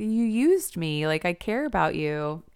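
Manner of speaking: put-on hurt puppy-dog pleading voice. Retelling a show character's reply to his lover: imitating puppy-dog pleading. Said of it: "he's just like a puppy dog".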